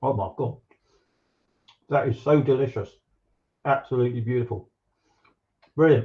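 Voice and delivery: talking with mouth full while eating. Tasting a chocolate just made, talking with mouth full. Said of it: "I shouldn't talk with my mouth full".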